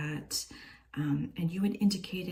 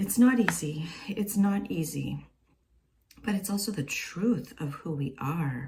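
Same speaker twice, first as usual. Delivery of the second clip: heartfelt, moved, raised emotional outpouring; 5 dB louder than usual. Speaker remembering past troubles while telling people they are supported, emotional. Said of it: "I'm getting kind of emotional".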